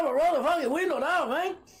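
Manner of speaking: put-on high stoner voice. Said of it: "I sound like [name] and [name]".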